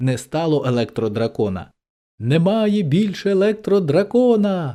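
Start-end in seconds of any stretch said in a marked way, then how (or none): 2.2-4.7 gleeful, high, joyful exclamation. The king runs into the dungeon, joyfully exclaiming. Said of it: "радісно вигукнув король".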